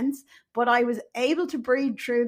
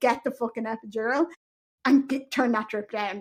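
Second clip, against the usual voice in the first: play-acted furious, angry, insistent and demanding tone. Speaker retelling giving birth, acting out a demanding outburst to staff. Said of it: "I was very demanding then".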